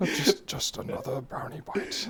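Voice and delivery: bad, slow, breathed-out whispery voice. Showing a co-host a favorite bit: Gandalf voice. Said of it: "The Gandalf voice".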